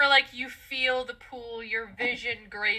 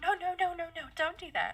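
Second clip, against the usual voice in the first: very soft, high, tinkling, twinkly tiny voice; 7 semitones higher, 5 dB quieter than usual. A friend's voice is heard on the battlefield, in a very soft twinkly little voice. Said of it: "very soft, twinkly little voice".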